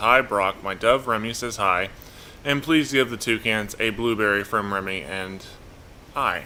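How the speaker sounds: ordinary talk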